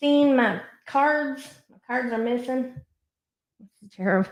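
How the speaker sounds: imitated voice with a Texas accent. Trying again to get a texas accent for the t o impersonation. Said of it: "let me see if I can get my Texas on".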